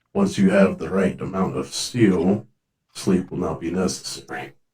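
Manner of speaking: muttered under the breath. Speaking in character while approaching the people, muttered under the breath. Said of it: "under my breath with that".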